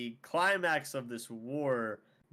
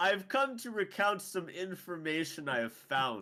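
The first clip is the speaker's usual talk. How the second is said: noble, dignified, stately, slow and pitched-up; 6 semitones higher than usual. Acting out a companion who walks downstairs to share news: noble, dignified manner. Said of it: "nobly walks downstairs and is like".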